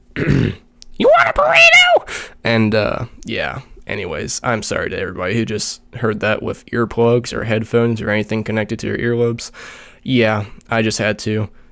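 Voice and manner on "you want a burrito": pitch raised high, slow and loud delivery. A streamer does a voice line for his character, in the Mexican Toad voice. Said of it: "I'll do a voice line".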